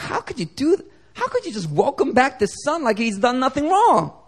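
upset, angry voice. Retelling the parable, voicing the older brother: acting out an angry brother. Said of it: "He was angry".

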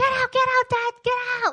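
mock child's voice, very high, frantic screaming. Telling a story, acting out Caleb yelling through the door, imitating a scream. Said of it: "he's like screaming".

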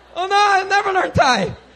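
high, loud panicked cry.

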